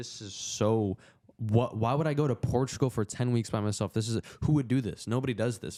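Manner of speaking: acted, weepy, tearful voice through crying. Retelling crying while homesick on a farm: imitating own past crying. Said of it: "I cried".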